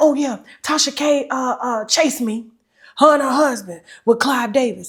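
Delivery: glib, slick, smooth-talking voice. Retelling what a guest said on the blue couch: imitating someone talking fast. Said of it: "she talked so fast".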